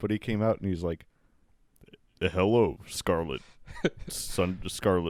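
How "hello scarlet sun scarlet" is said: deliberate, low, slow, dragged-out put-on voice. Acting out how a man greeted Scarlet when he came out, in a lowered voice. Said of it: "just by kind of lowering your voice".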